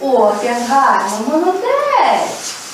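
put-on warm child-directed voice.

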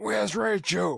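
badly done rough, creaky growl. Joking about having secrets, one speaker does a bad Batman impression. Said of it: "that was terrible".

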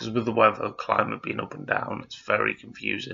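croaky, creaking voice pushed through the throat.

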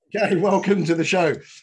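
giggly, laughing through the words. Host opening the show after the guest made him laugh: laughing while talking. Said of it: "I'm laughing".

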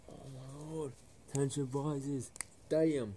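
shocked high gasp, hushed then loud.

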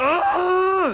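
high-pitched, loud, frustrated yelling at full force.

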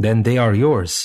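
ordinary delivery

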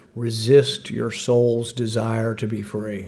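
calm, soothing, level female announcer voice. Retelling the drones sent into high-rise apartments, imitating a soothing woman's voice. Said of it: "in a soothing voice of a woman".

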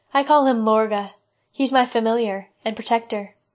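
plain

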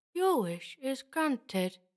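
low mumble through barely moving lips. The creature speaks to the boy Nigel: mumbled through barely moving lips. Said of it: "it mumbled, through lips that barely moved".

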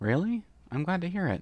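timid, slightly high voice. Answering a friend's praise, a character replies, sounding a little shy. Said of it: "sounding a little shy".

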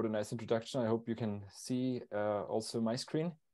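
too quiet, very quiet voice. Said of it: "Speak up a little bit".

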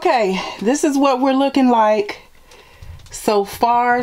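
speaking winded and breathless, short of breath. Moving things off the floor, showing the progress so far: out of breath. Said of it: "I'm out of breath, I'm winded".

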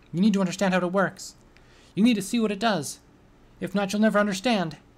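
high, loud, crazed pony character voice. A being seizes the narrator's mind and speaks to her, in a mad pony's voice. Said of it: "saying in a mad pony's voice".

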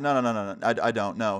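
usual speaking voice

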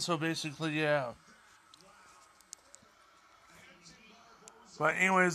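speaking while eating. Talking to someone while still eating after dinner: talking while chewing. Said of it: "sorry, I'm chewing while I'm talking".

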